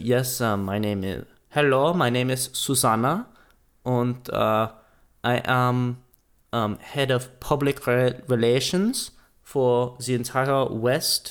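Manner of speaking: slow, fake, put-on German accent. Retelling how a PR woman introduced herself on a field trip; imitating Susanna, fake German accent. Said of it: "I'm making her German".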